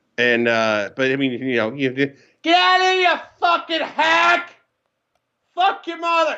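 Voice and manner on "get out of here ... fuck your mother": mock, shrill, high screaming. Showing what fans yell at players: imitating a fan screaming. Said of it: "that type of shit getting screamed at you".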